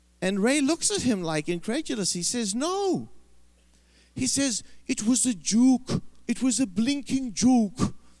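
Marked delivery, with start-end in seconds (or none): 4.9-7.8 put-on Welsh accent of a pastor. Retelling Ray Bevan's reply to a man asking about the £1 million, in a Welsh accent. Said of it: "that's Welsh accent".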